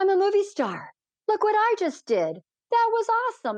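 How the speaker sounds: very high, thrilled, boastful voice. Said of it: "he's like".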